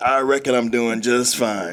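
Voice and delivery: put-on cowboy voice. Answering "how you doing, partner" while joking around: put-on cowboy talk. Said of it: "do all cowboys have to talk like this?".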